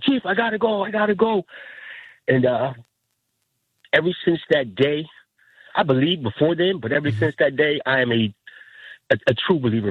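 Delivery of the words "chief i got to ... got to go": acted, frantic, very high urgent screaming. Recounting seeing a bright light in the sky, quoting a man: retelling a scream. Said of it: "He's screaming".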